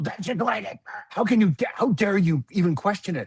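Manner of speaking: angry outburst. Retelling a mother's reply to being asked why: imitating an angry mother. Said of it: "she just got so angry at me".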